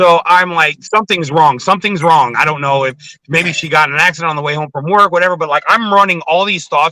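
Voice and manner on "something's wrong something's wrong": normal talking voice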